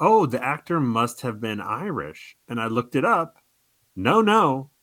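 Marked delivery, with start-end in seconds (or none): none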